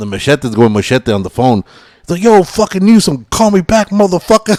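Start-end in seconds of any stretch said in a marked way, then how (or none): 2.2-4.6 mock, very high shouted yell. Retelling a phone interview, imitating Danny Trejo yelling at the interviewer. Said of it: "he's fucking yelling at this girl".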